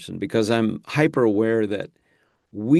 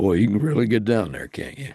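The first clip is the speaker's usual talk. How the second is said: very deep, low-pitched voice. Retelling what the actor said to him when they met: deep Sam Elliott impression. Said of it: "get down deep enough to sound a little bit like Sam".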